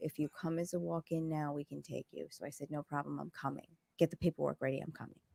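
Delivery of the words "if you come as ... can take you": whispered, hushed, much quieter. Retelling what the lady at the vet said when called, whispering. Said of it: "The lady whispers".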